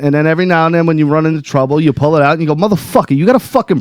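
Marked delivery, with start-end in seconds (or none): 2.6-3.8 street-tough New York accent, higher pitched. Showing how to use it when running into trouble, New York accent. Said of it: "learn a New York accent".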